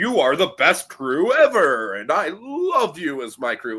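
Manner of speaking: grandiose, self-serious, swooping, pompous sea captain voice. Describing a film's self-aggrandizing sea captain, imitating him addressing his crew. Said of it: "He talks like this the whole movie".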